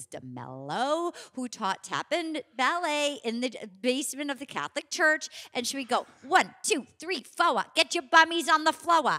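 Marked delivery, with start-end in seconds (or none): 6.3-9.1 put-on speaking with Rhode Island accent. Recalling the tap and ballet teacher in the church basement, in Mrs. DeMello's thick Rhode Island accent. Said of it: "a thick Rhode Island accent".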